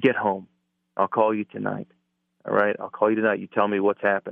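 ordinary talk

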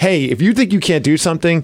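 ordinary talk

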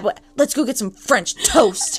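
angry delivery. Retelling a scene where the character was so mad: imitating a mad delivery. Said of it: "And he was so mad".

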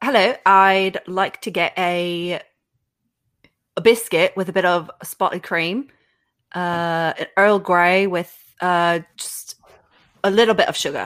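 put-on, assumed British English accent. Performing a line after agreeing to try: put-on English accent. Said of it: "That was a better English accent".

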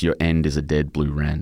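ordinary delivery

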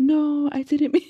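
put-on very high, sweetened, nice voice. Recapping a show, acting out Teresa trying to convince Armando: imitating Teresa's nicer tone. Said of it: "even her tone of voice changes".

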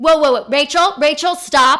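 very loud, irritated, condescending tone. Reenacting an insurance agent on the phone: imitating an irritated, condescending caller. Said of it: "This is a reenactment".

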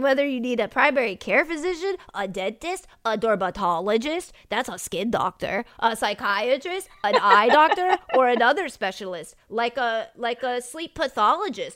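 goofy, nerdy voice. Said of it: "whatever this voice is, it telling you about ZocDoc".

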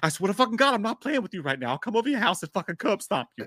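put-on, mock-angry, threatening-sounding voice. Retelling the reply after calling Mark, imitating Mark's angry threat. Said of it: "He'd be like".

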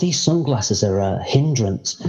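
ordinary talk, nothing marked

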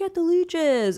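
high, slow, urgent delivery.

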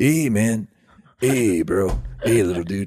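mellow, spaced-out, laid-back stoner voice. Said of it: "I made him sound like the stoner from The Simpsons".

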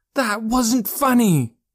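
very high, indignant, angry yell. Joe, after a struggle, yells at the boy who tricked him, shouting. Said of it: "Joe shouted".

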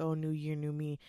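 ordinary talk

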